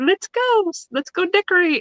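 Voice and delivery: high, bouncy, chirpy, cheery excitement.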